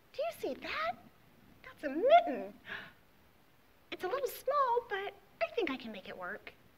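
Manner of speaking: very high, loud, animated, sing-song hedgehog voice. Storyteller voicing the hedgehog about to hop into the mitten: hedgehog character voice.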